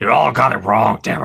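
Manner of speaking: put-on gravelly, creaking, booming voice.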